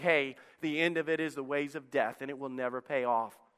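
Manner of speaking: normal talking voice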